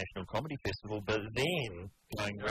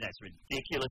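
ordinary delivery

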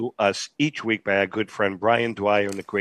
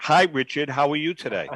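ordinary talk

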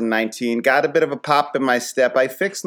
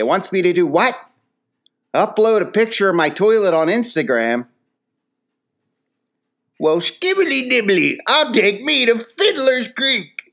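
high-pitched put-on old-timer prospector voice; 9 semitones higher than usual. Imagining an old head reading toilet-repair directions, doing an old-timer impression. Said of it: "This is a little impression I got".

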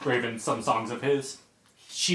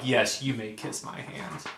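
put-on regal voice, quieter; 4 dB quieter than usual. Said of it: "with the regality and the above it allness".

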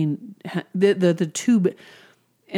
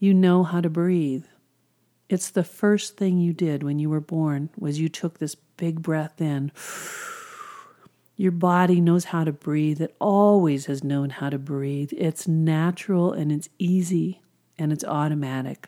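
mock very soft speaking. Retelling words spoken into a patient's ear: retelling soft speech. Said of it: "I very softly said".

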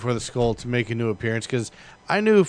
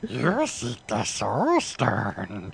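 strange, soft, swooping put-on creature voice; 5 dB quieter than usual. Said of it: "Are you Smeagol or are you Yoda?".

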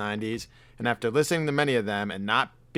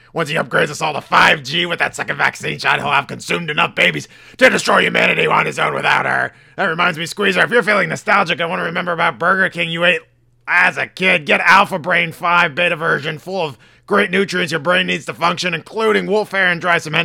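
gruff, raving talk-host voice, higher and louder; 6 semitones higher, 10 dB louder than usual. Doing a visit from Alex Jones for the co-host: Alex Jones impression. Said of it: "you wanna hear a visit from Alex Jones today".

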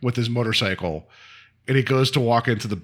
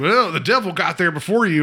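put-on Southern accent, much higher; 6 semitones higher, 3 dB louder than usual. Recapping a scene, quoting the garbage man, imitating a Southern accent. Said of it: "why his Southern accent now".

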